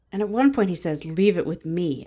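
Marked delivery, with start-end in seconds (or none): 1.0-2.0 mock-sinister, menacing tone. Retelling a minor character's line from something watched, mock-sinister. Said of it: "it sounds so sinister".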